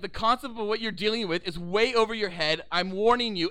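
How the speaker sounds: ordinary talk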